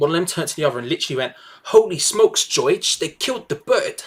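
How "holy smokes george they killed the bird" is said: horrendous put-on New York accent. Retelling what one person said to another, in an attempted new york accent. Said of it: "I'm going to try to do the accent".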